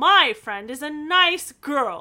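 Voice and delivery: very loud, lofty, superior, haughty tone. Recapping a scene, a speaker acts out George's reply to a man: mock-haughty. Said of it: "Haughtily, she says that".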